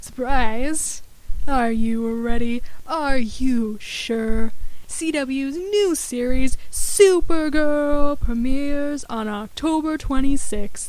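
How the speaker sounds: game show announcer delivery. Announcing a series premiere to the audience: game show host voice. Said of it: "Game show voice".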